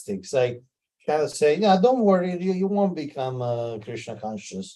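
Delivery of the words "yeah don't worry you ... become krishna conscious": put-on sarcastic sing-song, high and swooping. Retelling a son's reply to his father: imitating a sarcastic reply. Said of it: "this answer is kind of sarcastic".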